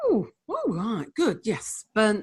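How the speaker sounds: put-on northern English accent with swooping pitch. Speaker acts out what the husband character would say: northern voice. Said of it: "I'm doing a northern voice".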